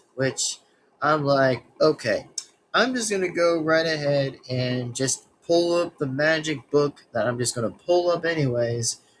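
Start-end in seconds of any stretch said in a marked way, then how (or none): none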